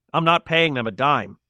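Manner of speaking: plain reading voice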